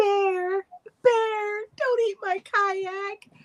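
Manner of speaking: very high, distressed, upset, drawn-out begging. Describing a video of a woman stranded on an island: imitating a high, upset voice. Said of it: "she's got this like high voice and she's so upset".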